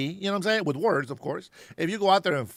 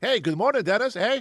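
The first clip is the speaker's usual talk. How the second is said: jokey put-on Canadian accent, pitched up; 5 semitones higher than usual. Joking to a viewer, mimicking how Canadians supposedly talk: mock Canadian accent. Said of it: "a Canadian that, that talks like that".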